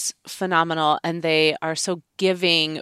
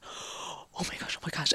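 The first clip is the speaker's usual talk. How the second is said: very hushed, slow, urgent, excited whisper; 15 dB quieter than usual. Retelling how Jason quietly whispered when he spotted someone: imitating Jason whispering excitedly. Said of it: "he's trying so hard to whisper".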